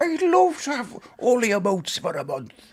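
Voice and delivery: very high-pitched put-on Irish lilt. Reading out a chat message aloud in an Irish accent. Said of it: "I'm gonna go to an Irish accent then".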